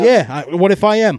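loud, high defiant shout. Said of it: "Now you're raising your voice".

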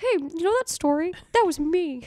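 squeaky, high, loud cartoon mouse voice. Imagining what the kid from the story might say now, in a put-on voice. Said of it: "Did you use your Mickey voice for that?".

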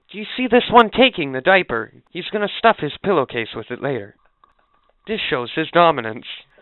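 wildlife documentary voiceover. Picturing a voiceover over a scene of homeless people, as a mock nature documentary narrator. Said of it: "All I picture is a voiceover".

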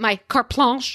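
put-on the words spoken with a French accent. Doing an impression of mom saying a French phrase: imitating mom speaking French. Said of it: "that was my mom's, my impression".

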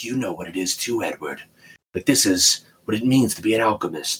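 hushed, low whispering voice. Describing a remorseless father, the speaker quotes him in a low whispering voice. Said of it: "he has this low whispering voice".

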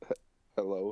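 nervous, timid voice. Voicing a character who nervously greets a shadow figure: nervous hello. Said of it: "I nervously, like".

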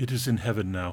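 put-on child voice with a cold tone. Retelling a chilling line a child says after killing a bird: imitating Esther saying it coldly. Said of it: "she very coldly says to them".

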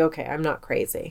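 plain

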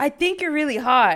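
loud, high-pitched put-on voice. Retelling how a drunk girl came up and spoke: imitating someone saying it loudly. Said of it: "says really loud".

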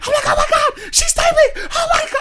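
very high, loud, panicked, freaking-out screaming. Recounting seeing her typing on WhatsApp in the car: retelling screaming, freaking out. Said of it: "I start screaming".

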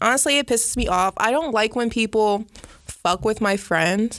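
ordinary delivery

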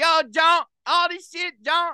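Cleveland way of talking. Imitating a man from a Cleveland video while comparing accents: imitating a Cleveland accent. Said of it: "I did a very good impression".

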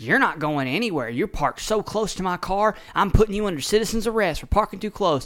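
put-on all-out screaming tirade. Retelling how a woman screamed at a man parked next to her car. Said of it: "she starts screaming".

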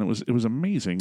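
ordinary talk

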